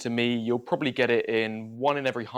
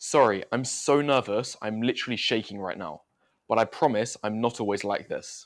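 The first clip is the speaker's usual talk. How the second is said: ordinary talk, nothing marked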